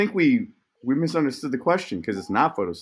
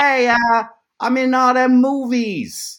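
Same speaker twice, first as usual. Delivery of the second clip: put-on pitched-up Boston accent; 11 semitones higher, 7 dB louder than usual. Trying out impressions for the others, the speaker does Mark Wahlberg with a Boston accent. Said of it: "Is that my Mark Wahlberg?".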